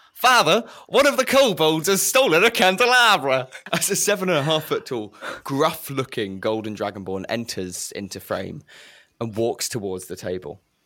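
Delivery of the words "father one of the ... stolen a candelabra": shrill, very high, loud calling out. Voicing a dragonborn calling to their father: shouting. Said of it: "they shout".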